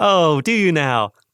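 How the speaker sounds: very slow, high, drawn-out fake-polite tone. Retelling a reply to a book club husband's idea: fake-smiling reply. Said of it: "I put on my fake smile".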